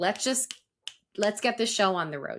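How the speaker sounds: ordinary talk, nothing marked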